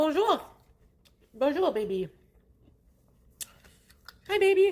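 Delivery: talking with mouth full. Eating a burger, greeting someone, talking while chewing. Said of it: "Sorry for chewing like that".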